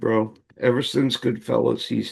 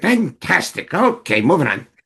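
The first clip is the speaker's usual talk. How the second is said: high, swooping, drawn-out delivery; 5 semitones higher, 3 dB louder than usual. Retelling what the director called out from behind the set: imitating Martin Scorsese. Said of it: "and you'd hear".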